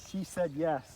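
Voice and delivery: ordinary talk, nothing marked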